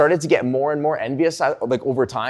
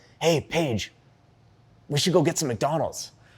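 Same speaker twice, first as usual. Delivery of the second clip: sneaky, hushed, quiet stage whisper; 6 dB quieter than usual. Retelling a car ride, half-whispering a plan to a sister: imitating own half-whisper. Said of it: "I just whisper over to her".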